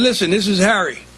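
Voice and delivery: ordinary talk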